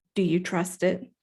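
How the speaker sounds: put-on deadpan, bone-dry, flat, expressionless delivery. Retelling what someone asked about a two-way pager: imitating a deadpan question. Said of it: "he just said deadpan".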